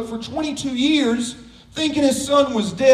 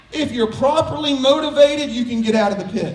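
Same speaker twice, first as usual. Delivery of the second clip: plain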